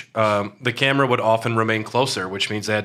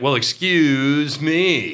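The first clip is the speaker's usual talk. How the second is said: dry, dripping sarcastic tone; 3 semitones higher than usual. Describing how a character responds in Japanese, imitating a sarcastic tone. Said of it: "like with a sarcastic tone".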